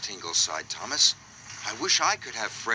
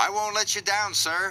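proud, very high-pitched voice; 10 semitones higher than usual. Thomas answers Sir Topham Hatt, proudly. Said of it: "whistled Thomas proudly".

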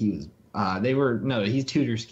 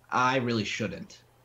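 imitated sarcastic tone. Retelling a friend's answer to the Garry's Mod suggestion, retelling a sarcastic reply. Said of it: "and he said it sarcastically".

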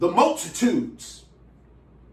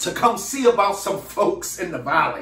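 ordinary delivery

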